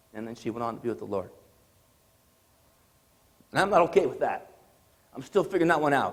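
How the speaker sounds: very low, hushed, quiet emotional voice. Speaker telling of a woman's last message to him before she died, getting emotional. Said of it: "Apologize for getting emotional".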